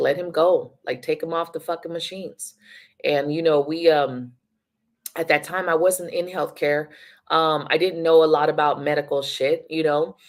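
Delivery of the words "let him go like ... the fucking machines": mock pleading, imploring, begging tone. Retelling a plea at a hospital deathbed: imitating someone begging. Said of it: "And he was begging".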